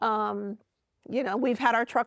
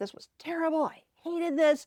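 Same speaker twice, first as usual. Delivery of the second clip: high-pitched, mock mad, cross griping voice; 6 semitones higher than usual. Retelling a lady's complaint about her stressful move: imitating someone angry. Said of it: "she was so mad at me".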